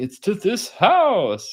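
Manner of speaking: high-pitched, slow, grand, surprised voice. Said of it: "take him to the house and be like".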